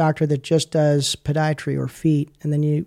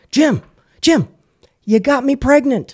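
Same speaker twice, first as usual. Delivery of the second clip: put-on very high, shrill, carrying shout; 10 semitones higher, 5 dB louder than usual. Retelling a patient spotting someone down a store aisle: imitating someone yelling. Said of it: "yells down the hallway in the grocery store".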